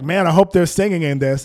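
loud, mock-playful, jokey tone. Quoting the man seated next to the speaker, retelling a joking remark.

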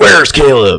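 loud, high-pitched superhero voice. Retelling a scene where Nol Khan grabs a woman's leg and questions her, in his best Batman voice. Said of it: "He's in his best like Batman voice".

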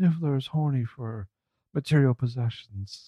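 hushed, whispered scream. Imagining a scene line done as Eddie Redmayne whisper scream. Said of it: "do his whisper scream thing where he's like".

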